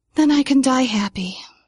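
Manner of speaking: sighing, said on a sigh. Narrator reads the dandelion's reply after being called gorgeous: sighing. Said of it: "The dandelion sighed".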